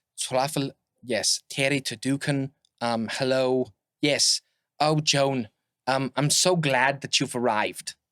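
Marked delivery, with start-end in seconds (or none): 4.8-8.0 put-on German accent. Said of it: "His accent has changed".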